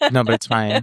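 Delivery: mock flat deadpan delivery. Imitating the other speaker's flat reactions: imitating a flat reaction. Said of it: "You're just very flat with reactions".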